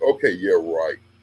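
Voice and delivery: put-on rude delivery. Retelling answering a phone call he thought was a joke: imitating own rude reply. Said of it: "just rude 'cause I'm thinking".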